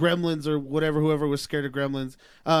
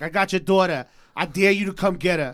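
loud, taunting New York accent; 3 semitones higher, 5 dB louder than usual. Imagining how a poltergeist delivers its challenge: new york accent. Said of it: "New York accent".

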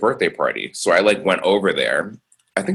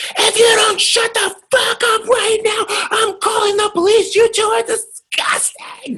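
mock screaming rant, voice pitched way up. Retelling what an angry neighbor screamed through the floor: imitating a neighbor screaming. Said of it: "We just heard her screaming".

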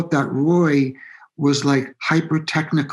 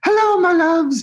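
pitched-up, comic English sketch character voice; 3 dB louder than usual. Imitating Roy, who came to the band's gig and is really funny, in a Monty Python character voice. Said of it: "And he talks like that".

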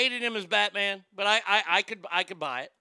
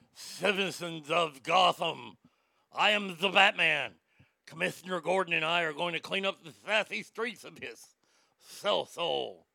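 put-on lisping superhero voice, lower; 3 semitones lower than usual. Mocking an actor's lisp as Batman: lisping Batman voice. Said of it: "his lisp when he was Batman".

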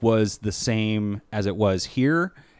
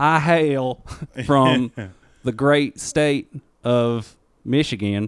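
very slow, drawn-out, put-on southern drawl; 2 semitones higher than usual. Joking that everyone from anywhere sounds alike: put-on southern accent. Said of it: "they got a southern accent".

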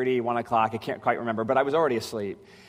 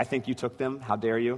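mock-accusing tone, quieter; 5 dB quieter than usual. Speaker retelling asking someone about missing keys, in a put-on accusatory tone. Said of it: "It was kind of accusatory tone".

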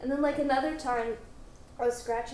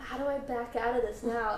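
ordinary talk

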